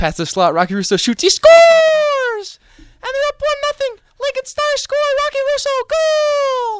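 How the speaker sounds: put-on, very high-pitched, loud, belted shout. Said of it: "That's, that's pretty high pitch".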